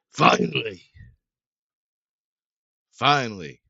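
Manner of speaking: very loud, brutish dwarf bellow. Narrating a scene, the speaker voices a dwarf who stares at you: brutish dwarf voice. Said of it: "He says".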